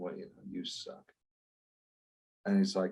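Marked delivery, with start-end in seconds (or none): 0.0-1.0 put-on annoyed mutter under breath, lower and quieter. Retelling a film scene, imitating William Katt muttering under his breath. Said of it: "William Katt's under his breath and he's like".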